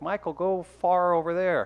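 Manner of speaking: "for" pronounced as "far". Explaining the Saint Louis accent using a TV example: Phyllis Saint Louis accent. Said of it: "Phyllis on The Office, when she's like".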